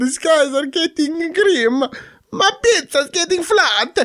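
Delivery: put-on Italian accent, pitched way up high. Repeating a phrase after the other speaker, the speaker does an Italian accent.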